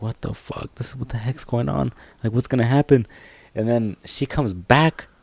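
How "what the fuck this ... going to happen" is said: fast, frantic, panicked words tumbling out. Retelling a tense moment waiting alone, acting out own panicking. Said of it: "And I'm just panicking".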